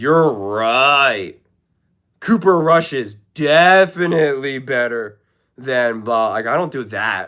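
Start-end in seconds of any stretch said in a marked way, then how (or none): 0.0-6.3 over-the-top sarcastic tone, right drawn out. Showing the sarcasm style the speaker says they avoid: exaggerated sarcasm. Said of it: "I don't do exaggerated sarcasm where I'm like".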